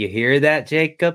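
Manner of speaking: mock Midwestern inflection. Imitating a voice heard in a recording: imitating a Midwestern inflection. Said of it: "that Midwestern inflection that they have".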